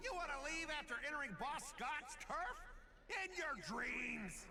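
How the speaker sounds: delivered like a dog's bark. Voicing a boss who stops someone trying to leave: sounds like a dog barking. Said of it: "Why does it sound like a dog barking?".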